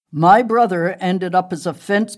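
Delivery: ordinary delivery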